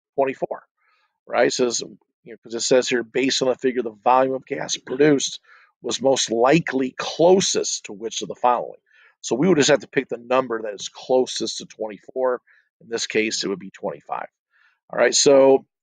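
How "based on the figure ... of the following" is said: usual speaking voice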